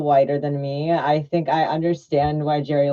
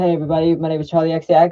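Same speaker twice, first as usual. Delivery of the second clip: put-on British accent; 4 dB louder than usual. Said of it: "pretend to have a British accent".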